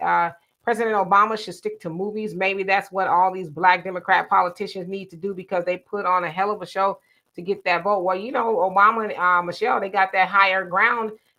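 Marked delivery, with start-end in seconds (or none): none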